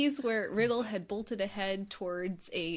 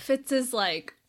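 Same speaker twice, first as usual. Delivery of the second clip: plain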